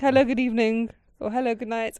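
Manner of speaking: put-on Queen's English accent. Act out a woman's polite greetings in a kind of Queen's English accent. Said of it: "Queen English, kind of like".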